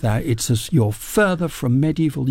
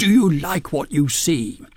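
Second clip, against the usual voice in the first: put-on loud voice, much higher pitch; 4 semitones higher than usual. Recalling a man who appeared by the library glass cases, imitating him speaking loudly. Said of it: "He said in a loud voice".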